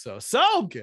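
slow, loud emphasis, drawn-out "so".

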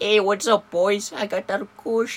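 put-on very high, loud, squeaky kid-like voice. Imitating Brad, who talks like he's twelve: Brad's high voice. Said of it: "With the high ass voice".

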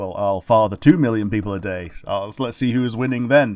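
normal talking voice

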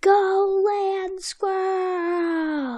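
high, slow, drawn-out cheer.

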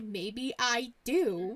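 snippy, attitude-laden, sassy delivery, acted. Repeating the other speaker's reply back to her, imitating her attitude. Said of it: "When you said that, you're like".

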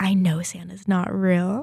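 quiet whispering voice. Retelling telling grandma a secret so a younger sister won't hear: retelling a whisper. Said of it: "I whispered in my grandma's ear".

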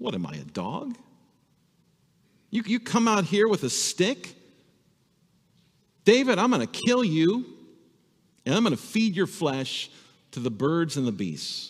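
high, scary, menacing, taunting voice. Retelling a story, acting out Goliath's threat to David: imitating Goliath's scary threat. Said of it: "let's say scary speech".

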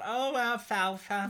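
lisping out the mouth corner. Imitating a child actor's line in a movie: imitating Darla's side lisp. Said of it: "she's got that side lisp".

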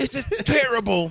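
very high, shouted yell. Acting out yelling at the kitchen staff: pretend yelling at kitchen staff. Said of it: "Yell at them".

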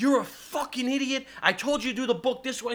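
high, furious, berating screaming rant. Retelling a coach berating a player: imitating a coach screaming. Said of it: "Screaming at this kid".

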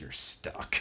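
fierce, close, intense, hushed whisper. Retelling how she leaned in even closer: retelling an intense whisper. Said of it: "whispers even more intense".

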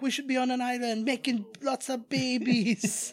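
drawn-out, high put-on Jamaican accent. Quoting a horror movie character's line: imitating a Jamaican accent. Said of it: "I don't know why he was Jamaican".

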